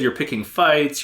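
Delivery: ordinary talk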